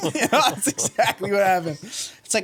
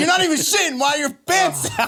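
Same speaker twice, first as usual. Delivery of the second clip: direct, blunt, higher-pitched tone; 5 semitones higher than usual. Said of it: "She's like".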